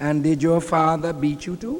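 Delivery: imitated West Indian accent. Retelling how a woman questioned a boy hiding from police, West Indian accent. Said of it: "in her beautiful West Indian accent".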